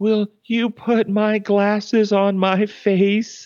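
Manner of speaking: very slow, wavering, quivering, frail and weak voice. A speaker retells what an ill lady said to the nurse, imitating a quivering, weak voice. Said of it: "she says with a quivering, wavering, weak voice".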